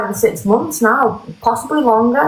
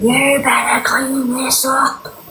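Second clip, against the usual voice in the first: acted-out scream, higher pitch; 2 semitones higher than usual. Retelling marching back in, the speaker acts out screaming at him. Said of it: "And I started screaming at him".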